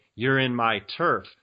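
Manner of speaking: plain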